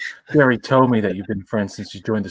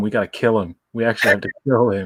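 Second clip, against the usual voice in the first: plain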